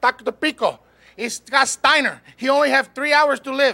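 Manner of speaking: put-on Puerto Rican accent. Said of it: "Did you like his Puerto Rican accent?".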